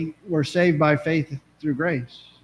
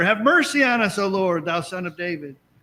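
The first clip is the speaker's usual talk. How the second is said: mock voice lifted in a louder outcry; 3 semitones higher than usual. Speaker retells the two blind men calling out, retelling a louder cry. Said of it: "They got louder".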